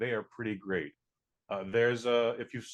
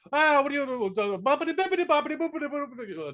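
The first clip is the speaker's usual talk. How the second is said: put-on thick, cheesy, very high Italian accent; 3 dB louder than usual. Mocking the accents in House of Gucci, do a cheesy thick Italian accent. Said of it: "these cheesy, thick Italian accents".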